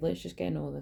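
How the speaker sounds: usual speaking voice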